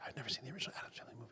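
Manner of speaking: very quiet, barely audible, secretive whisper. Admitting something she doesn't want people to know, whispering. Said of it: "You don't have to whisper".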